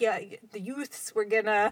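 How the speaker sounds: put-on Bronx accent laid on thick. Describing how relatives talk, doing a My Cousin Vinny accent. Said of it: "It's like my cousin Vinny".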